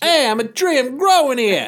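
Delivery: very loud, very high Boston accent. Joking about a man dressed as a tree: Boston accent. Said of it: "in a Boston accent".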